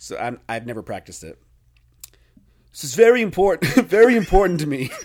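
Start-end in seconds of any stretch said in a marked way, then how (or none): 2.7-4.9 booming, full-volume, big loud proclamation. Retelling a quote, doing a Trump impersonation. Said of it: "this is my Trump impersonation".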